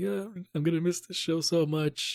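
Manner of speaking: high, tearful crying voice. Retelling a fan at a Q and A: imitating a crying fan. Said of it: "crying, being like".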